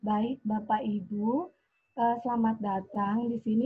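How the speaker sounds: limp, slow, low-energy, listless voice. Showing a too-slow morning opening, imitating Dian's slow, limp opening. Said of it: "bicara terlalu lambat ... orang lemes banget sih ngebuka".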